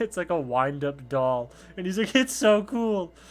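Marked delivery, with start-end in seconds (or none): 2.1-3.1 mock super frightened cry, very high and raised. Describing a One Piece scene, acting out a character being super afraid. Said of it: "he's like super afraid when he says it".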